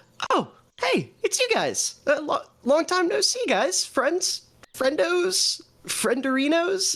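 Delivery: very high rambling chatter, stumbling over words. A narrator voices Alora greeting the group, rambling. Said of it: "I'm talking too much, aren't I?".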